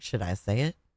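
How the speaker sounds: catty, gossipy, musing tone. Reacting to a clip, voicing what a lady thinks: imitating Susan, catty. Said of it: "She like".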